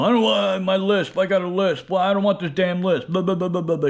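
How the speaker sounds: play-acted angry rant, high and loud whine. Mocking reviewers who get pissed off at the dentist over a lisp: imitating an angry complainer. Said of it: "get all pissed off at the dentist".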